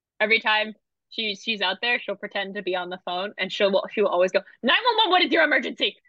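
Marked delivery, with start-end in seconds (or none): 4.6-5.9 loud and fast, much higher pitch. Retelling how a pal pretends to be on the phone, very loud and very quick. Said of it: "Very loud, very quickly".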